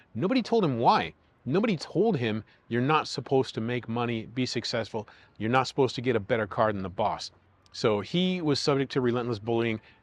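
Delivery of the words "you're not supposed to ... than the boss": ordinary delivery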